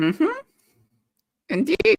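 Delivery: suddenly high-pitched voice. Answering a remark about arriving at Hogwarts, voice suddenly high-pitched. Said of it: "your voice got really high pitched there".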